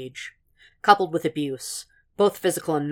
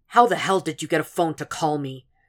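insistent, demanding tone. Woken by an early phone call, a man questions the caller, demanding. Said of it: "He demanded".

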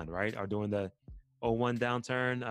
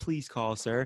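mock needy pleading, slower. Contrasting a confident approach with a needy one, in a mock needy plea. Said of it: "a position of Neediness".

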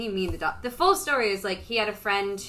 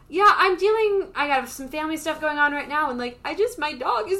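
rambling voice creeping higher and louder; 7 semitones higher, 6 dB louder than usual. Retelling telling others about family trouble at a check-in: imitating own voice getting higher. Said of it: "I just feel your voice, like, getting higher".

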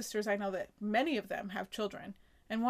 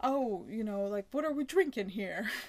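put-on New Jersey mobster accent. Retelling a sitcom scene, quoting Cookie: Cookie's New Jersey mobster accent. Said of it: "she has a real New Jersey mobster accent".

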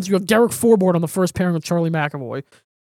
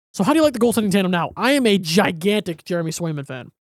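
plain

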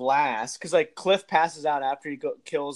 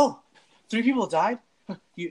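mock casual indifference, higher; 6 semitones higher than usual. Retelling a movie character's reaction to deaths: imitating nonchalant tone. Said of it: "is so nonchalant, like".

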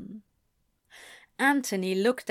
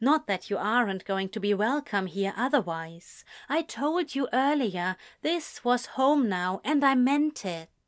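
ordinary delivery

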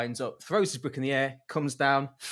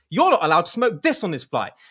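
acted out, furious, shrill and very loud; 6 semitones higher, 8 dB louder than usual. Retelling a joke where she is furious at a man: imitating a furious woman. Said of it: "she's furious at this point".

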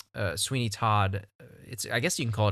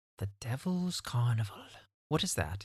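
soft put-on British accent, slipping out; 7 dB quieter than usual. Reading a film title off a watch list, the speaker slips into a British accent. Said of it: "Why do I talk with a British accent now?".

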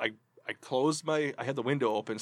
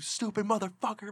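shrill, screaming outburst; 8 semitones higher, 5 dB quieter than usual. Retelling spiking the brakes when a driver pulled out in front; retelling a scream at a driver. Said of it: "and I'm sitting there screaming".

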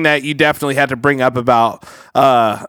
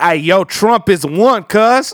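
exaggerated mock slang caricature voice, higher; 6 semitones higher than usual.

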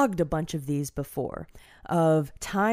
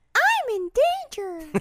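put-on very high-pitched child voice; 3 dB louder than usual. Doing a requested Simpsons character impression: Ralph Wiggum voice. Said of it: "I feel like you usually go Ralph on that one".

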